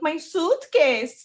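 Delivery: put-on child voice. Retelling a video of a four-year-old in a suit: imitating Barron Trump's little accent.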